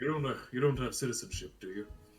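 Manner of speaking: hushed whispering voice. Asking another character a question in character: whispering. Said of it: "we're whispering this".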